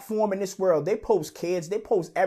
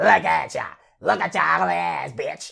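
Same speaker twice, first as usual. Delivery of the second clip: roughened, creaky, mocking and taunting voice; 3 dB louder than usual. Mocking the person being addressed, imitating her own voice. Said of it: "Now I'ma use your own voice".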